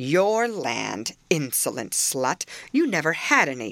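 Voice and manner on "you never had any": plain reading voice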